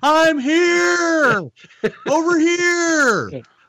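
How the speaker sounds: very high, slow, drawn-out calling holler. Speaker retells calling out when others thought they weren't there: retelling a yell. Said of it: "I'm yelling".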